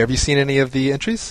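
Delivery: ordinary talk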